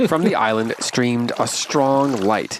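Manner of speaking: ordinary delivery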